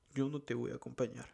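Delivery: plain reading voice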